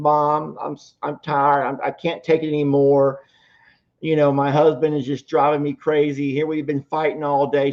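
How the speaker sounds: acted, high, sobbing, worn-out tearful voice. Retelling a daughter phoning her mom late one night, imitating someone crying. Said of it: "her daughter's just crying and she's crying".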